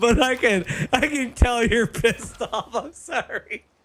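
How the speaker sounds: talking with giggles and laughter leaking through. Apologizing to someone who is angry, laughing while talking. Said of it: "I know I'm laughing".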